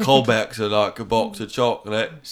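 put-on British accent. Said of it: "That's British".

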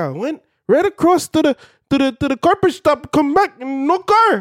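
put-on terrible high Indian accent. Retelling what another man said to him, in a bad indian accent. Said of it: "Worst Indian accent I've heard in a while".

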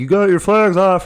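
creepy little voice, high, loud shouting. Retelling the other speaker shouting to a guy during a game: imitating a creepy shout. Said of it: "you can hear your little creepy voice, like, shouting".

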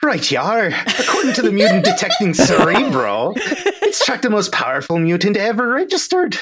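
hammy, thick Irish brogue, high and swooping. Told to play it up and lean into it, over-the-top Lucky Charms accent. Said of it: "Like, they write his accent so ridiculously over the top because it's the only way for you to know he has an ... Which is why he sounds like fucking Lucky the Lucky Charms guy in".

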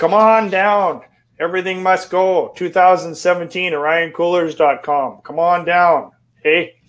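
cheesy, amateur Canadian infomercial-style pitch voice. Cooler company rep plugging a sale on their colors: token Canadian amateur infomercial. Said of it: "I'll do the token Canadian amateur infomercial".

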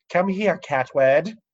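odd, high-pitched, fake put-on British accent. Showing how they speak to their sister's cat: really weird British accent. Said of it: "I also speak to it in a really weird accent".

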